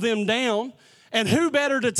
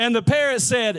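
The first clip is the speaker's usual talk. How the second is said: normal talking voice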